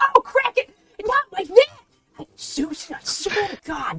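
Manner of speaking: put-on bossy old lady character voice. Voicing an old lady baker scolding another baker: bossy old lady baker voice. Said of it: "dapper little old ladies".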